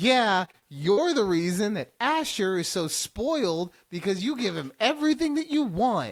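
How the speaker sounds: acted light, joking, playful teasing tone. Speaker retells what they said to their mom: retelling playful teasing. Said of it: "this was very playful".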